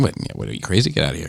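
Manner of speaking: movie-style mobster voice, rough and creaky. Retelling a movie scene where characters argue about shoes: impression of a movie mob character. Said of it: "I'm just doing an impression of this guy".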